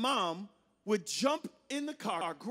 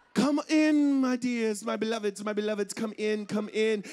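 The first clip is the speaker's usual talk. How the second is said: slow, fake, put-on British accent; 5 dB louder than usual. Retelling how mom welcomed strangers to the table, imitating mom's British accent. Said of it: "Speak with a British accent".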